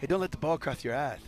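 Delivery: put-on voice with a tiny lisp. Quoting what Junior Adams always used to say, in a Junior Adams voice, little lisp. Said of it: "Junior Adams had a little tiny like lisp".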